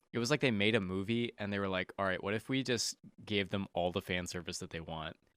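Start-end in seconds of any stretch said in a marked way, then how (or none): none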